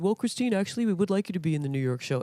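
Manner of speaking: put-on very deep voice. Speaker retelling what he told her, Gerard Alessandrini impression. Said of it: "He has a very deep voice".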